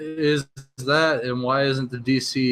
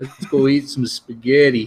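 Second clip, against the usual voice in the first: put-on old Italian gangster voice; 4 dB louder than usual. Joking around as an old Italian mobster: old Italian mobster voice. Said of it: "like I'm old, some old Italian mobster".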